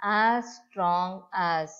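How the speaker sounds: as strong as, each word stressed, drawn out slow. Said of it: "See here".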